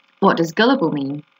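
plain

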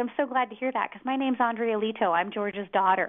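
ordinary talk

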